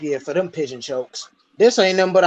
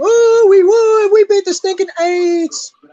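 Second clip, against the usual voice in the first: shrill, high, loud gloating, taunting scream; 7 dB louder than usual. Retelling how rival fans taunt every year: imitating rival fans screaming. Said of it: "they be screaming".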